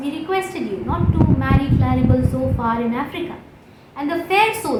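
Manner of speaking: normal talking voice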